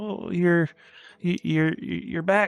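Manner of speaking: put-on, mock-nervous stammering stutter. Describing a man they met, imitating a nervous stammerer. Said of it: "He was he was very nervous".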